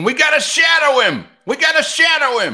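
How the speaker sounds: very high, very loud, shrill swooping holler. Retelling what a fan in the section kept yelling: imitating a fan yelling. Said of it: "the guy yelling in my section".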